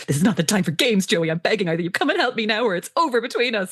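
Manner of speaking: mock angry, furious, fed-up voice. Reading a character's ultimatum to her boyfriend aloud: acting furious. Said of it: "Liz is furious".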